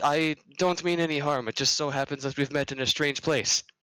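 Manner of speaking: slight nervous laugh in voice. A character speaks to a woman he met in the Feywild, nervous chuckle in voice. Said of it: "a slight chuckle in his voice, like a nervous one".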